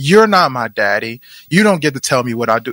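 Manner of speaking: ordinary talk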